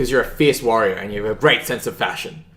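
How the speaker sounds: plain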